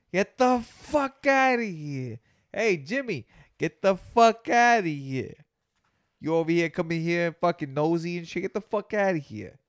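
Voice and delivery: gangster tough-guy voice. In a comic bit, telling Jimmy to get out, in a Goodfellas-style mobster voice. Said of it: "That sounded like a Goodfellas type of".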